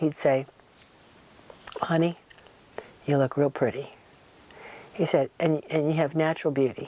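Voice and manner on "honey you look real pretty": hushed, quiet, courteous, polite murmur. Retelling a man's words, kept from the others in the room, quiet and polite. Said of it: "telling me very quietly and very politely".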